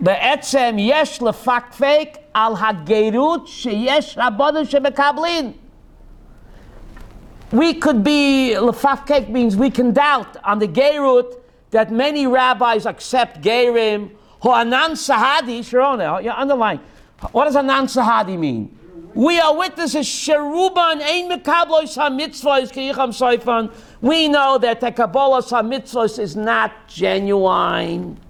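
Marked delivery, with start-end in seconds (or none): 0.0-4.2 read slowly and carefully. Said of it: "I'll read it slowly".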